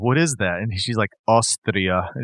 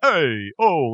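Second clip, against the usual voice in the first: heavy, mocking New York accent; 4 semitones higher than usual. Mocking how everyone says they're from New York: Andrew Dice Clay impression. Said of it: "like they're Andrew Dice Clay".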